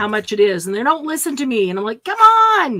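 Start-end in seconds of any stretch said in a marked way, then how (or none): 2.0-2.8 very high-pitched, shrill yell. Describing always yelling at the TV during Price is Right, retelling yelling at the TV. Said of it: "I'm always yelling at the T V".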